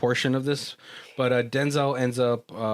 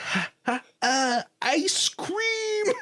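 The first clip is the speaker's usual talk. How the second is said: bad celebrity impression, very high, squeaky and slow. Retelling someone's attempt at an Eddie Murphy impression: bad Eddie Murphy impression. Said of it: "I could do Eddie Murphy".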